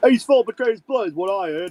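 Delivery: put-on British hooligan accent and voice. Voicing a patron muttering gossip to the baker: British hooligan voice. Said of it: "the British hooligan voice".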